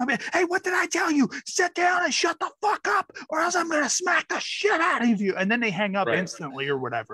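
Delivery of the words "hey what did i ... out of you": high-pitched, shrill, furious scolding scream. Alone in the car on a call, the speaker pretends to scream at kids, fake screaming. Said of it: "I'll act like I'm screaming at my kids".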